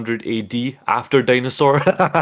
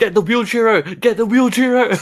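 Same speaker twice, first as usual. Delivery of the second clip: very high, shrill, high-pitched yelling; 10 semitones higher than usual. Retelling what was shouted when A C was about to win: retelling own shout. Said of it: "I was shouting".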